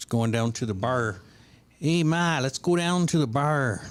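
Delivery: put-on Midwestern American accent. Trying out how the woman they're discussing would talk, in a Midwest accent. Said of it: "Midwest accent".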